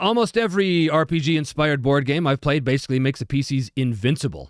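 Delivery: ordinary talk, nothing marked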